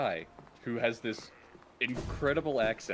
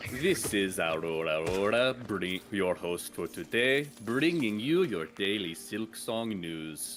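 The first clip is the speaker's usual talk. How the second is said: put-on, almost German accent; 2 semitones lower than usual. Asked what kind of accent it is, showing it as a news host: almost German accent. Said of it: "that sounds almost German".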